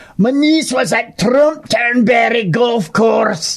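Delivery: brief put-on Scottish accent, slow and high. Speaker announces doing the accent for a moment, then speaks in a put-on accent. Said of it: "I'll do the I'll do the accent for a moment".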